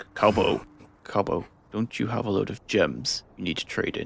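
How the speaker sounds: hushed half-whispered stage whisper. In character, quietly asking a companion about trading gems: half-whispering. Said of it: "I'm whispering this".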